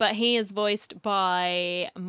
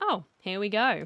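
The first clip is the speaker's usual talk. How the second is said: ordinary talk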